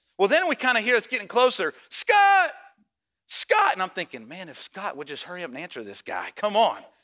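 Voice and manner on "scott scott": play-acted, very high calling yell. Telling a story, the speaker imitates a man yelling someone's name. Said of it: "the guy's yelling in my ear for Scott".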